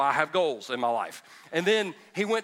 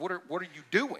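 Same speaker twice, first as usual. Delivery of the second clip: put-on shocked voice, quieter; 6 dB quieter than usual. Retelling parents finding their child in the bathtub: imitating shocked parents. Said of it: "they were kinda shocked".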